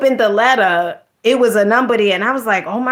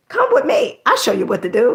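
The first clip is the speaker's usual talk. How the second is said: put-on lady voice. Offering to show viewers something, imitating that lady. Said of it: "sound like that lady who be like".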